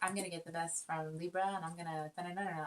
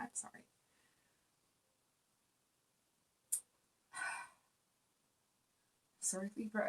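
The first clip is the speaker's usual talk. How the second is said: breathy whisper, on the verge of crying; 4 semitones higher, 4 dB quieter than usual. Apologizing to libra as the urge to cry keeps coming: close to tears. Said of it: "I don't know why I keep wanting to cry".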